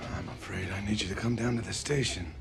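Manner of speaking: put-on gruff, very low older man's voice. On the phone, the dad speaks in a gruff voice. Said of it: "He's got kind of a gruff voice".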